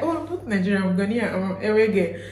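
plain

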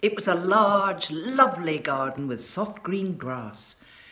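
ordinary delivery

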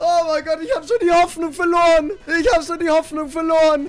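overjoyed and relieved. Streaming a game, finally getting the item after losing hope: overjoyed and relieved. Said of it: "Jetzt bin ich wirklich sehr happy".

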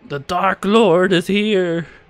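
full-blast, very loud, drawn-out high-pitched shriek. Describing a video of a little kid at McDonald's, retelling a kid's scream. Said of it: "and he just screams".

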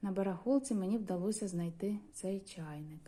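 plain

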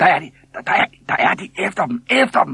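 very high, loud, shrieking screaming cry. Narrator reading the boys chasing two small fellows across the island, screaming. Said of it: "Skreg drengene".

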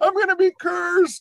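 mock shrill, very high, loud sobbing wail. Retelling a friend's words after the broken window, imitating a crying friend. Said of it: "My friend's crying".

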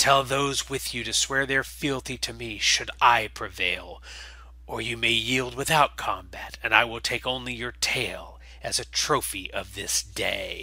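hissed reptilian creature voice throughout. Game master voicing the exile vox challenging Ockvril, hissing. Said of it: "From the cargo bay emerges the exile vox, [name] of Hatch Cathar, followed by an entourage of Cathar loyalist Nall. They all look fairly lean and ragged from months within the superstructure of the colony vessel. The exile vox is ... hissing softly, and then speaks. "[name], shine on you, glorious c".

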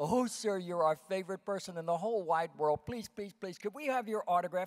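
put-on gushing, eager, excited, high little-girl pleading voice. Retelling what a young girl said asking for an autograph: imitating an excited girl. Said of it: "came running up to me all excited".

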